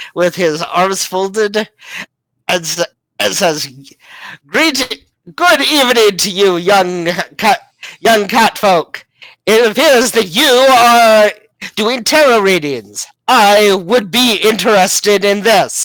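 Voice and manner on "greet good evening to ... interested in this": booming voice, "are" drawn out. A man bursts in and greets the young cat folk, loud greeting. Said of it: "realizing this hulking man just burst in. / realizing this hulking man just burst in. / realizing this hulking man just burst in. / [name]'s tail is very floofy at the loud voice".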